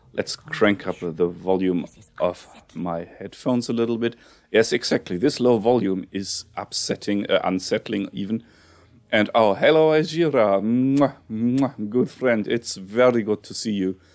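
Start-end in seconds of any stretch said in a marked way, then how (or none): 9.1-13.9 put-on fake Russian accent, pitched up. Host greeting friend Ajira on the episode, in a Khajiit accent. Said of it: "I slip into this Khajiit accent".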